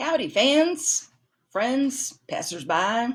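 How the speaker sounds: fake Southern accent, drawled, slow and high. Greeting viewers at the start of a check-in: put-on southern accent. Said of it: "Why am I talking in a Southern accent?".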